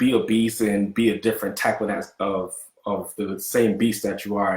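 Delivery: ordinary delivery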